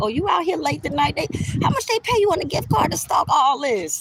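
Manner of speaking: slick, joking teasing tone. Retelling a remark said to people watching late: slick joking remark. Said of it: "I'ma say something slick".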